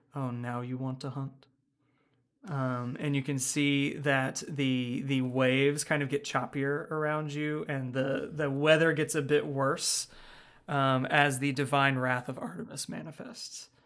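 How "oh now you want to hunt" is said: put-on quiet, bored voice. Describing a voice that speaks over the waves; imitating a quiet, bored voice. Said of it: "it sounds almost bored".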